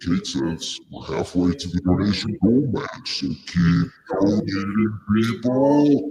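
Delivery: silly, put-on monster creature voice. Relaying a donation update to the show's audience, in a monster voice. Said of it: "Nobody can hear you with that stupid voice".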